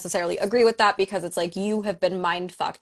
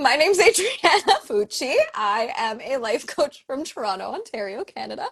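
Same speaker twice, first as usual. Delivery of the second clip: giggling through words, higher pitch; 6 semitones higher than usual. Introducing herself on a live chat, laughing while talking. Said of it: "I have the giggles now".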